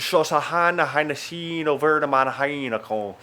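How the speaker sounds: slow, drawn-out gibberish in fake Irish accent. Retelling a Dublin Airport announcement repeated in Irish, in mock Irish gibberish. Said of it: "That's my mock Irish".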